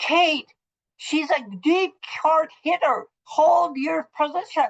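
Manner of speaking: play-acted screaming, very high. Retelling how she turned around on a teammate after losing a point, reenacting a scream. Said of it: "turned around and s- s- screamed at her".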